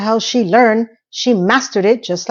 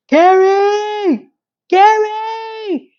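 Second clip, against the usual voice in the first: very high screaming with one word stretched long; 11 semitones higher than usual. Recounting a drunk man yelling up at a woman's window, imitating someone screaming a name. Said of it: "screaming her name out of from the landing".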